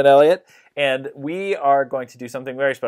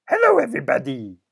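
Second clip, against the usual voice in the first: high, cuddly, lovable furry monster voice; 8 semitones higher than usual. Reading a picture book aloud, the speaker voices the monster's greeting in a Grover voice. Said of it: "And he says".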